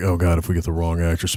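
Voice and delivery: ordinary talk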